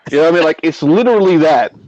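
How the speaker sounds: plain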